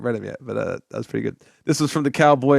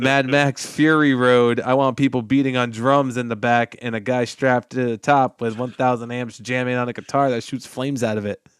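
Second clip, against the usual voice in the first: ordinary talk, nothing marked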